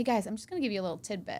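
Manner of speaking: put-on subtle sarcasm. Retelling how the speaker warns bar customers: retelling own subtle sarcasm. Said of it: "this very subtle sarcasm".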